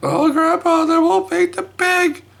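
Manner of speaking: play-acted, very high, bawling little-kid wail. Retelling a Three Little Pigs reading, the grandpa voices the crying kids: imitating a bawling child. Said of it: "she's bawling".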